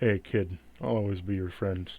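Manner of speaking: hollow, bony, spectral ghost voice. Voicing spectral hands that speak to a player: bony spectral voice. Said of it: "say in a bony voice".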